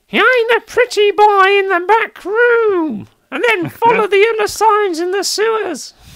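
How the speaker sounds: very high, loud, thin, shrill nasal whine. Game narrator voicing a figure giving the players directions, in a really thin, nasally voice. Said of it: "in a really thin, nasally voice".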